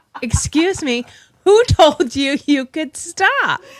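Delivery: voice for a dog. Voicing what the dog's face seems to say: voicing the dog. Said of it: "his face is like".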